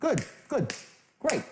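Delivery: slightly cheerful, upbeat, kept restrained. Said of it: "Little upbeat, not too much".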